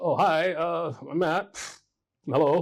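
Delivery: mock timid, scared, very slow. Retelling meeting a sassy lady, the speaker greets her, acting out being scared. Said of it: "And I'm like scared".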